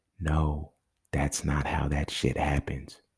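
hushed, dramatic half-whisper under the breath. The speaker announces half-whispering this point because it is so dramatic, half-whispering. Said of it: "I'm going to whisper this".

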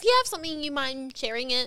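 mock high, slow, petty passive-aggressive politeness. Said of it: "petty passive aggressive".

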